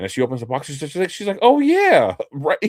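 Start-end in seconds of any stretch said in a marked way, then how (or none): 1.4-2.7 mock shrill, very high, loud, feigned oblivious tone. Retelling how the cashier answered when asked about Pokemon, imitating her playing dumb. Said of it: "she like kind of acts dumb or oblivious".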